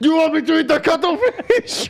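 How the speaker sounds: put-on Japanese accent. Quoting a South Park scene, repeating a character's line in a Japanese accent. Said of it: "Is that a Japanese accent?".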